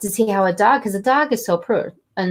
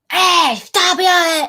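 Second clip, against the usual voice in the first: put-on, very high, shrill, loud yell; 10 semitones higher, 5 dB louder than usual. Describing how people react when a dog barks, retelling a yell at a dog. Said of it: "you start yelling at them".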